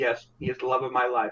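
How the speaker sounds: completely flat, level, emotionless deadpan monotone. Trying out ways to perform a love line, completely deadpan. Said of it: "she's completely deadpan".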